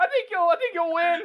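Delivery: squeaked-out, squeaky voice. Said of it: "the Morty voice".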